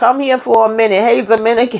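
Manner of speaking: imitated woman shouting. Retelling a woman yelling at a car, imitating her yelling. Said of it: "she over here yelling at the car".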